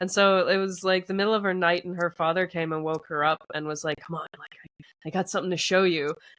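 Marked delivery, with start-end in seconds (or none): 4.1-6.1 put-on conspiratorial, secretive tone. Retelling how her father woke her in the night, retelling a conspiratorial tone. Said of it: "in this kind of conspiratorial tone".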